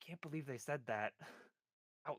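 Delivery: hushed whisper. Voicing a character who whispers to the one beside her: whispering to someone. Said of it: "whisper to him".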